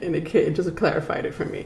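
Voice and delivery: speaking through laughter. A tarot reader pauses a Rider Waite reading, laughing while talking. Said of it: "I'm laughing because".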